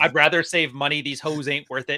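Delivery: ordinary talk, nothing marked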